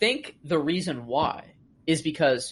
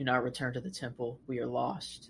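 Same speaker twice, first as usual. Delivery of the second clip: heartbroken, devastated, tearful and crying; 4 semitones lower, 11 dB quieter than usual. Acting out the hologram message as it might sound: imitating a devastated message.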